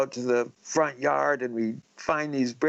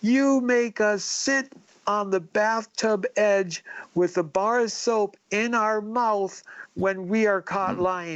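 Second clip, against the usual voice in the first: mock yelling, higher pitch; 7 semitones higher than usual. Retelling catching dad lying about Santa: retelling yelling at dad. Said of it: "I started yelling at my dad".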